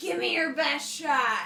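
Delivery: belted-out yell. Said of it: "I will yell out".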